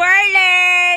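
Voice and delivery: loud, drawn-out calling voice.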